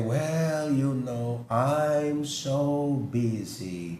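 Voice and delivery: tired, stressed, low and very slow. Acting out how busy people answer when asked how they are, imitating a tired, stressed person. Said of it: "with a very tired and stressed face".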